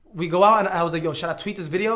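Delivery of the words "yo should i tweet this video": ordinary talk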